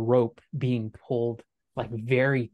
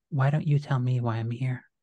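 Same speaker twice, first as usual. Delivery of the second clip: softer, gentle, more judgmental voice. Voicing the same line as Jimena hears it: softer, more judgmental voice. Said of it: "It's softer, and, but it's almost more judgmental".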